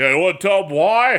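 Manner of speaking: macho, he-man manly voice. Retelling what his wife asked, imitating her in a manly man voice. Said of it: "I made her sound like a manly man".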